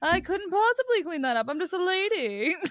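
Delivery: affected, high, put-on mid-Atlantic accent. Showing the accent used when talking to Josh: transatlantic accent. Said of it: "when I do a transatlantic accent".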